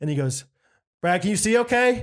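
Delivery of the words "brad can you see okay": loud, pitched-up, mock pointed passive-aggressive tone. Retelling what a man said to the speaker, mock passive-aggressive and loud. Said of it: "passive aggressive way... He's talking to me at a six, seven out of ten".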